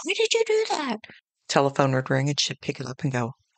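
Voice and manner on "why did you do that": high-pitched, mock screaming voice. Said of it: "just screaming".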